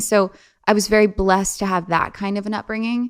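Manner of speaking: ordinary delivery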